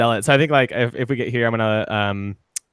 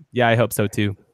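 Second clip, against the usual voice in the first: put-on flat deadpan delivery. Recalling a scene, imitating how she deadpanned her reply. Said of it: "She like deadpans it".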